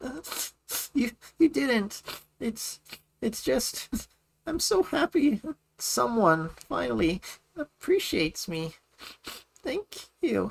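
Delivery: very high, tearful, spoken through crying. Asked why she is crying, a character answers, crying. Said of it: "Why are you crying?".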